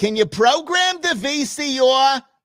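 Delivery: shrill, very high voice. Talking about becoming our parents, the speaker imitates their mom: imitating my mom's voice. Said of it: "That's my mom's voice".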